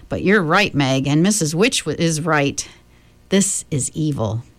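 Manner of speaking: ordinary delivery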